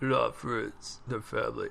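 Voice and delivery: very low, very deep, very quiet, soft rough rumble. Trying your best at a voice you say you can't do, attempt a low Vin Diesel voice. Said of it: "I'm gonna try my best. I really I can't do a Vin".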